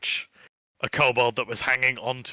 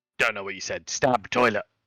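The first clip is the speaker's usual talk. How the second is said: put-on little kobold creature voice; 3 semitones lower than usual. Voicing a kobold answering a question put to it in Draconic: kobold voice. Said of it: "the kobold ... and then goes".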